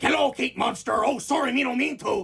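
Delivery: rough, high croaking voice. Showing the voice a school drama club used for Tricky Monster: Tricky Monster voice. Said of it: "a voice like this".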